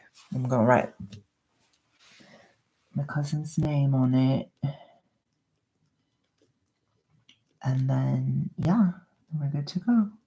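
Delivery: put-on soft-spoken British ASMR accent. Speaker putting a tag on while talking to viewers, soft-spoken british asmr voice. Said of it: "we're going to talk in British ASMR voice".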